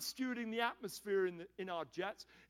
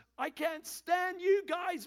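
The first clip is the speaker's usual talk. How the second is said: mock furious, loud, high-pitched screaming outburst; 8 semitones higher, 6 dB louder than usual. Recounting a woman screaming at the speaker's group, retelling a yell. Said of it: "yelling at us".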